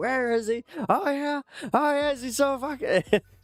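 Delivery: mock furious shouting, pitched very high. Retelling shouting at a church sign after getting mad: imitating own angry shouting. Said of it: "I just started kinda shouting".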